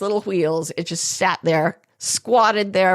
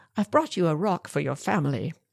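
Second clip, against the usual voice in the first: soft put-on British accent instead of South African; 3 semitones lower, 6 dB quieter than usual. Speaker retells what he said when he brought home a rock, put-on british accent. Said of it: "he has a British accent instead of a South African one".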